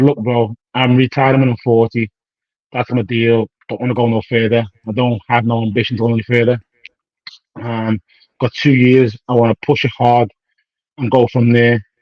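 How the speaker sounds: ordinary talk, nothing marked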